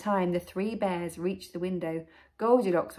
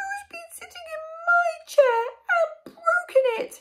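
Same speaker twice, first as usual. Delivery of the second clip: tiny, very high little voice; 6 dB louder than usual. Reading a story aloud, voicing Baby Bear in a tiny little voice. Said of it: "he asked in a tiny little voice".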